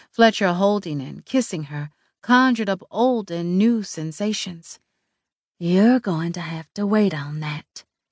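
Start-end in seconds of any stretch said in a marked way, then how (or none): 5.6-7.9 understated, private, low-key voice. Narrating a story, voicing a woman speaking into a phone mouthpiece, quietly. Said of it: "she said quietly into the mouthpiece".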